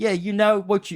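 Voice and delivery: attempted New York accent. Retelling what the cops said, attempted New York accent. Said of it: "I can't really do an accent like New York".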